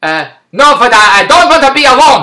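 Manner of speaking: put-on Hungarian accent, slow pace. Retelling a stop at Walmart, voicing his mother-in-law in a Hungarian accent. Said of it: "in her Hungarian accent".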